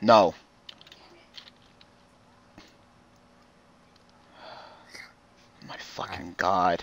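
exasperated, frustrated whisper, sounding close to losing it. Mid-duel, reacting to the other player's move, losing it, frustrated. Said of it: "Don't go mental".

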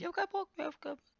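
put-on high, childish little kid voice. Repeating someone's complaint about going offline, imitating a small child. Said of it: "Wie so ein kleines Kind".

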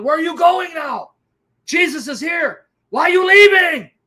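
shrill, loud screaming at the top of lungs, taunting. Retelling a woman screaming at a demon during a reading: imitating a woman screaming. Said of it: "At the top of her lungs".

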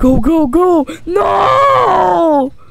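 anguished shouting.

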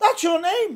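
high, loud shout. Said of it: "And I shouted".

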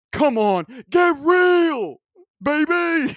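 excitable put-on voice, very high and very loud. Reading someone's tweets aloud in his voice, put-on impression voice. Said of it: "I'm going to read his tweets in his voice. This is my impression".

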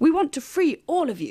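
said with plain pride. Clover speaks to the other animals: proud. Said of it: "Clover said proudly".

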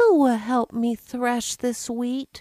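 weary, worn-out tone. A hen calls to her friends after cutting the wheat alone, tired voice. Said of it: "asked Little Red Hen in her tired voice".

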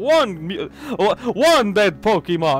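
put-on vampire voice. Counting dead Pokemon one by one, in the Count voice. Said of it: "I have to speak like the Count!".

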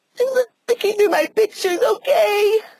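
crying while talking. Asked by the other speaker why they are crying, answering while crying while talking. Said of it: "Why are you crying?".

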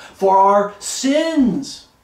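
loud, projected voice. Raising the voice so that people will hear, raised voice. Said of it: "if I raise my voice a little bit more".

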